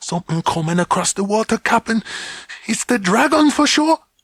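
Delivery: fierce stage half-whisper, very high-pitched. Reading a story aloud, Quarrel warning of something on the water: fierce half-whisper. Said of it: "Quarrel whispered fiercely".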